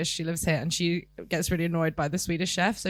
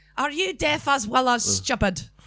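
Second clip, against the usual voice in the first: higher-pitched Scottish accent; 7 semitones higher, 4 dB louder than usual. Talking about their Scottish accent, doing a Billy Connolly Scottish accent. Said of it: "my Scottish is Fat Bastard or Shrek".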